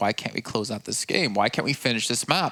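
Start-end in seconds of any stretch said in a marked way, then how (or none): none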